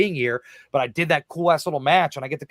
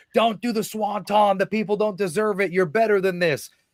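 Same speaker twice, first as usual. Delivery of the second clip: put-on half-shouted call, high and light; 6 semitones higher than usual. Retelling a match moment, acting out one wrestler yelling at another climbing the top rope. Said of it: "Matt turns and yells at him".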